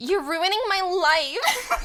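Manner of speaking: put-on very slow, high, whiny teen voice, "life" stretched out. Quoting a favorite cartoon heroine's line: whiny Annika teenager voice. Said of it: "Kelly Sheridan as a whiny teenager".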